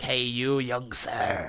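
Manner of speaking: very slow, creepy stranger voice. Retelling a stranger calling out from a dark alley in Poland: imitating the creepy man's voice. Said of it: "this guy was the creepiest person".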